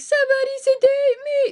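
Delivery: mock panic, very high, loud, tearful crying. Quoting a TV scene where Christina panics and cries: imitating Christina freaking out crying. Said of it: "Christina's freaking out and she can't stop crying".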